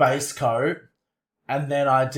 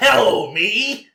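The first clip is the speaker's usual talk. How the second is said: high, throat-straining, voice-wrecking put-on voice; 8 semitones higher, 3 dB louder than usual.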